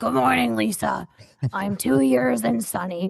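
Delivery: creaky, rough, growling voice. Retelling a coworker's daily morning greeting: imitating a growly voice. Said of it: "in this growly voice".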